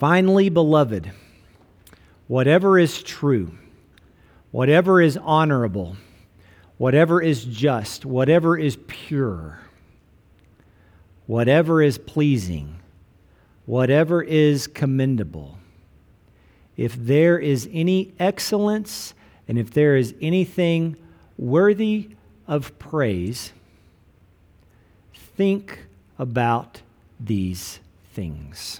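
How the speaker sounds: very slow reading with long pauses.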